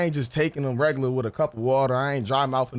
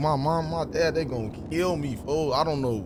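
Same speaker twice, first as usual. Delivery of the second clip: panicked voice. Retelling own words from the hospital visit: imitating own panicked words. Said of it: "I'm panicking".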